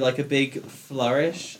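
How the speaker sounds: ordinary delivery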